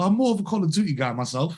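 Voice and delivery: put-on, borrowed British accent. Retelling what a seven-time world champion said while gaming: imitating a British accent. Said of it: "this is a part of my British accent".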